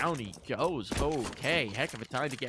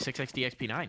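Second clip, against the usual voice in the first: rapid-fire, very quick delivery. Proving they can say six X D X P nine, said very quickly. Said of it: "I can say it really quickly".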